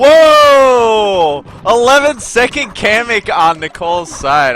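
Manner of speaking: very loud, high scream with long drawn-out whoa. Reacting in the moment, screaming. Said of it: "I'm sorry for screaming".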